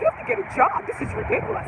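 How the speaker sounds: high, exasperated scolding tone, pitched way up.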